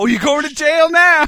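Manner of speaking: mock yell, high and loud.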